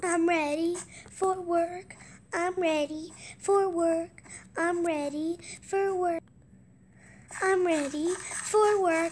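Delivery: loud, high-pitched cartoony voice. Doing a self-described best impression of a cartoon: SpongeBob voice. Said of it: "I'm going to do my best impression of SpongeBob".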